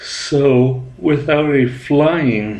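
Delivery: talking through a yawn. Explaining mid-sentence and apologizing for it, yawning. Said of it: "excuse me for yawning there".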